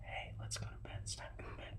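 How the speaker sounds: soft, unvoiced whisper. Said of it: "I tried the whi-".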